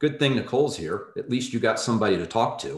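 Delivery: put-on, utterly deadpan delivery, no beat missed. Retelling what Rick said as the dejected speaker walked past, imitating his deadpan. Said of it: "Rick deadpans and says".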